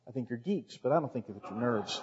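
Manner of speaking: very quiet, quick, playful joking teasing. Speaking to a church audience about being called nerds, playful teasing. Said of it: "I'm just teasing you".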